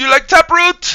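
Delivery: put-on thick French Canadian accent, very high and loud. Retelling the question Prox asked earlier, in Prox's thick French Canadian accent. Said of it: "French Canadian accent".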